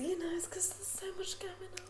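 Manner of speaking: mock whisper, high, soft and unvoiced.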